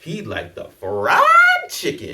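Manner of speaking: big, full-throated, very high, booming belted voice. Retelling a date ordering to the waiter: imitating a full-throated order.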